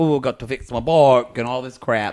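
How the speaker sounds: poor fake put-on South African accent. Imagining a man's reply when asked to help with money, bad south african accent. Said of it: "that's a really bad South African accent".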